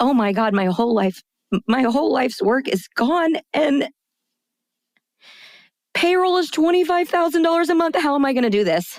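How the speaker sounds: emotional, near tears. Telling a listener about a past crisis, getting emotional: tearful, emotional. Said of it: "I can't believe I'm getting emotional".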